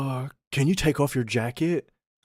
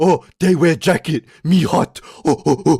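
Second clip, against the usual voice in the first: derisive, dim-witted ape-man voice; 4 semitones higher, 6 dB louder than usual. Mocking hikers who complained about a jacket: imitating stupid people. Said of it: "you know how stupid their fucking brain is".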